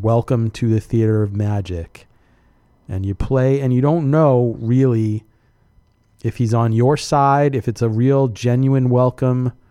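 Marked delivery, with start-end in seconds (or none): 0.0-2.1 put-on mechanical ghost voice. Recalling the machine's greeting after dropping in a quarter: mechanical ghostly voice. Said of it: "the mechanical ghostly voice dude says".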